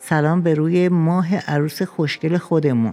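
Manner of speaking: plain reading voice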